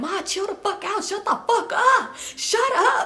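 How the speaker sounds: high, drawn-out, tearful crying wail. Retelling a son crying while telling his mother to shut up: imitating someone crying while yelling. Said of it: "While crying".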